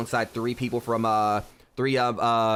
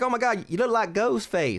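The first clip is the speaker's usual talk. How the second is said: very high voice with light country drawl; 11 semitones higher than usual. Speaker retells what a girl said on seeing them, with a slight country drawl. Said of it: "she had like a little bit of a country drawl to her".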